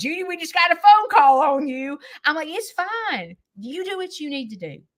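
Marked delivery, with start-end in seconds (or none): 0.0-2.0 acted laughter mid-sentence while talking. Imagining people in her community getting a phone call about her, mock-laughing while talking. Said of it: "start dying laughing".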